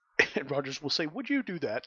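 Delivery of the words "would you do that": playful, joking voice. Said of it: "But, like, in a joking tone".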